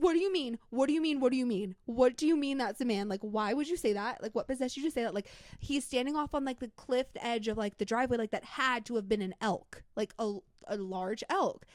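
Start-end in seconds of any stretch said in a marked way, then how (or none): 0.0-5.1 put-on frightened, panicked tone, higher. Retelling fleeing inside after seeing a figure: imitating own scared panic. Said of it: "we were so fucking scared".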